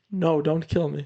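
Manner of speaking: put-on pleading character voice. Mocking a character's acting in a movie scene, imitating Spider pleading. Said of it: "Spider's acting in that scene".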